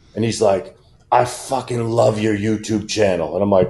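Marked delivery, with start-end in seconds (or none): 1.1-3.3 quieter put-on English accent. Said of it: "English accent behind me go".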